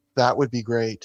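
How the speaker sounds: level, flat, deadpan monotone delivery. Retelling someone's answer to a question after a small pause, monotone. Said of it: "in a monotone voice".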